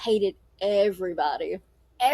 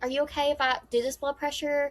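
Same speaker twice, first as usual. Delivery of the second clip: mock, exaggeratedly sweet, sugary voice; 3 semitones higher, 4 dB quieter than usual. Retelling what was said to a patient, imitating her own sweet voice. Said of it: "I'm being so sweet".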